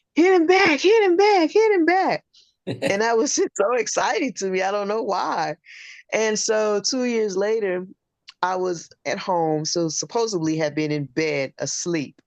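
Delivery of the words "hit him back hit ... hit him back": very high, shrill, loud repeated screaming. Recalling their mother screaming at Rocky in a movie theater, imitating a scream. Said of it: "she's screaming at Rocky".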